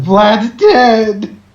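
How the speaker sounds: high, loud crying wail, sobbing. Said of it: "she walks in crying and just says".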